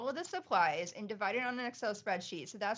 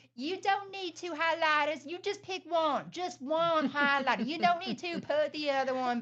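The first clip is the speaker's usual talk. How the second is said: mock yelling, higher and louder; 7 semitones higher, 5 dB louder than usual. Retelling a funny video of a parent at a store: imitating someone yelling at kids. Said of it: "yelling, pretending to yell at his kids".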